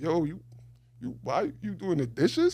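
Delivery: high sing-song teasing, laughing through the words. Retelling a relative teasing him about dishes: imitating someone laughing at him. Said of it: "really laughing at me".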